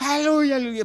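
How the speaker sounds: loud, high-pitched bursting shout. Asking listeners to imagine someone coming down the aisle: imitating someone shouting hallelujah.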